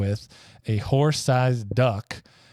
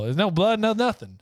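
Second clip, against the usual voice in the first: ordinary talk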